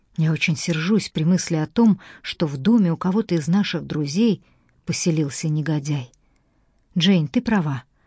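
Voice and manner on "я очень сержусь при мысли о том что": ordinary delivery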